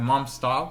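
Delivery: ordinary delivery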